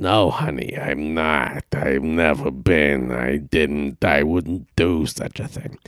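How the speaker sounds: very low, nasal, smoky mock voice.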